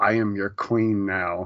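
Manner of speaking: imitated smug tone. Retelling a show character's line: imitating a smug tone. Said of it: "she was so smug".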